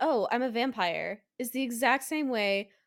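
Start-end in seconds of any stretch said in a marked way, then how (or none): 0.0-1.2 put-on, sarcastic, trollish delivery. Quoting a movie character's line, imitating Brad Pitt's sarcastic delivery. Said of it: "same cadence, same line delivery".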